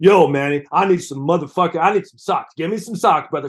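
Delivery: tough, hard-edged movie-character voice. Retelling the actor correcting the impression of himself as Buck. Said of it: "he was doing an imitation of him playing Buck".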